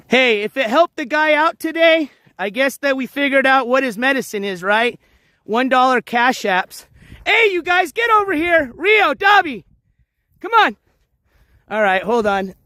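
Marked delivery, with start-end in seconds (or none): 7.2-10.7 high-pitched, raised, calling-out yell. Calling to the ones wandering off near the water, yelling. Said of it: "Sorry if I'm yelling".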